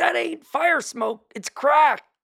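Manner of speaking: high, slow, drawn-out yell.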